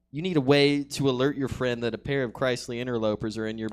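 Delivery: plain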